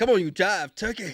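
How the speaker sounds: put-on seventies jive street-slang delivery. Joking about an office call: putting on a seventies jive voice. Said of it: "talking like you're from the seventies".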